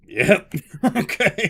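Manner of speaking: high, loud, slow laughing speech. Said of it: "and now I'm like".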